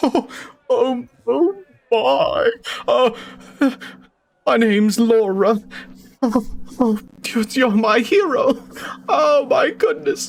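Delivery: very high, very slow, flustered swoon. Voicing a rescued woman thanking her rescuer: acting enamored and shaken. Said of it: "very, uh, enamored with you".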